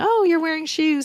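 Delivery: high, condescending, belittling taunt. Retelling how college classmates mocked the accent: imitating mocking classmates. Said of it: "just mocking my accent and saying".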